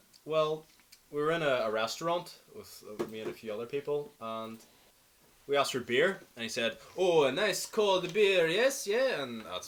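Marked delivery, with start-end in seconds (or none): 6.9-9.2 loud, slow, drawn-out put-on Italian accent, laid on. Retelling a man's reply when the group asked for beer in a restaurant, italian accent. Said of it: "that's my Italian accent".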